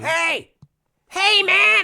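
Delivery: very high, voice-shredding yell, piercingly high. Doing a Sam Kinison bit for the others: Sam Kinison impression. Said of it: "this nouveau Sam Kinison thing".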